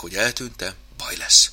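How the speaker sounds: ordinary delivery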